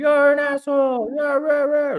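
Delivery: mock shouting at very high pitch, loud.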